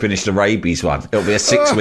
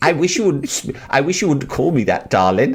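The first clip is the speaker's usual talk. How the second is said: camp, squeaky high little voice; 6 semitones higher than usual. Act out a man answering the woman who has just insulted him, in a camp little squeaky voice. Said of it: "in his camp little squeaky voice".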